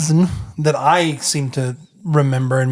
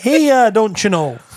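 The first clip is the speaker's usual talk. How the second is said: higher, fake Midwestern Wisconsin accent; 8 semitones higher, 3 dB louder than usual. Trying out regional accents, a line in a put-on Wisconsin accent. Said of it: "more from like the Midwest, like it's a Wisconsin".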